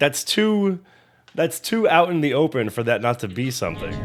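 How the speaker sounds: ordinary talk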